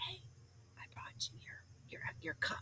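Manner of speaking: hushed, very quiet, barely-there whisper. Retelling bringing a cup into a busy control room: retelling speaking very quietly. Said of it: "So I'd be real quiet".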